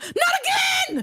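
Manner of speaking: very high shriek, not drawn out. Retelling getting into the bug room, reenacting own scream. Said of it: "I screamed".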